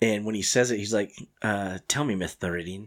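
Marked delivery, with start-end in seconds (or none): 1.9-2.9 put-on lisp, lower and quieter. Retelling a movie line about the circus: Kilmer lisp impression. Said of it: "Kilmer's got a lisp?".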